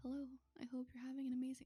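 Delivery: close-up whispery ASMR voice. Offering to do ASMR for the guys and getting real close: soft close-up ASMR whisper. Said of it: "you guys want me to do some A S M R? ... get real close".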